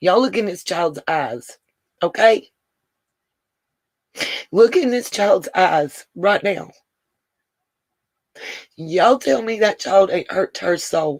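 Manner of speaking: holding back tears, trying not to cry. Showing viewers a child's picture posted on TikTok, holding back tears. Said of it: "I'm trying not to cry".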